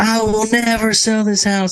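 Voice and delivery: very high, shrill, put-on southern-accent scream. Retelling what a woman kept screaming as the speaker walked away; mock-screaming in a southern accent. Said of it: "I think she had a southern accent".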